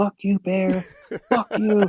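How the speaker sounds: put-on, very high, all-out top-of-the-lungs scream. Retelling a charging bear encounter: retelling a yell at a bear. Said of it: "I'm just yelling".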